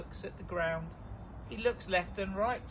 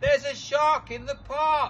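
very loud, high cry at the top of the voice; 9 semitones higher, 11 dB louder than usual. Narrator reading a story voices a character crying out: crying out in loudest voice. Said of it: "In his loudest voice".

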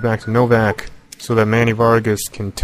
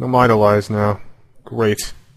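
plain

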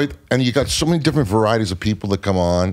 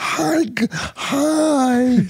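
put-on higher cooing baby-talk voice. Showing how people talk to dogs: talking like to a dog. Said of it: "I like talking when we talk to dogs".

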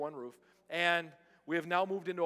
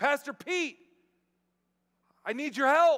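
very high, very loud hollering call; 10 semitones higher, 9 dB louder than usual. A pastor retells a woman calling to him across a parking lot, imitating her hollering. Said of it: "she hollers across the parking lot".

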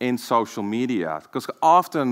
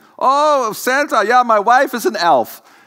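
bad fake Finnish accent, squeaky, very high; 12 semitones higher, 8 dB louder than usual. Retelling a smoking man's answer to the speaker's question, in a butchered finnish accent. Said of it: "I butchered Finnish accents".

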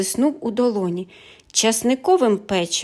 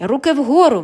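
sudden, loud, forceful shouting; 3 semitones higher, 5 dB louder than usual. Narrator reads the detective calling out as the thief is caught, shouted. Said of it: "крикнув детектив".

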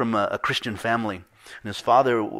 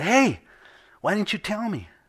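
mock very high yell, pitch swinging wildly; 10 semitones higher than usual. Telling a story, voicing a man shouting at another man, imitating someone shouting. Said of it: "the guy shouted to him and said".

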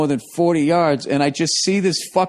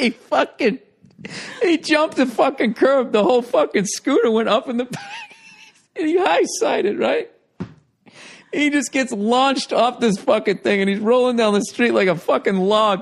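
laughing hard through words, higher; 8 semitones higher than usual. Telling another speaker how a rider crashed a scooter, laughing hard while talking. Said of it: "Why are you laughing so hard?".

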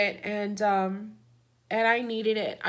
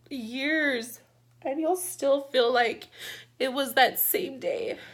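tearful, crying while talking, higher pitch; 3 semitones higher than usual. Telling you guys about her therapist, crying while talking. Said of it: "I didn't want to cry".

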